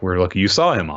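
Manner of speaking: plain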